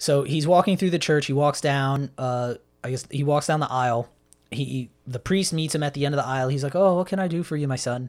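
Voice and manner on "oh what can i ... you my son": put-on Irish accent. Retelling a scene, quoting the priest greeting a visitor: Irish accent. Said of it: "That was Irish".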